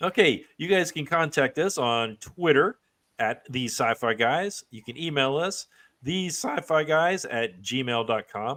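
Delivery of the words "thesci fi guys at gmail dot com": slow voice, crackling and breaking. Giving the email address listeners can use to make contact: voice crackling. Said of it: "my voice kinda crackled there".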